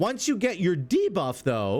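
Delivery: voice cracking hard, breaking mid-phrase. Explaining game mechanics to everybody, voice cracking mid-sentence. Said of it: "my voice just cracked really hard".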